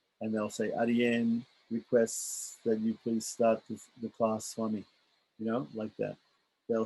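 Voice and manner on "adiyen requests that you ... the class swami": speaking softly and low, up close. Showing how people address the guru from up close, in a low quiet voice. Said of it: "they'll speak in a low a low voice".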